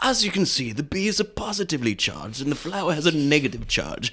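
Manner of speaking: high, hushed put-on nature-documentary narrator voice.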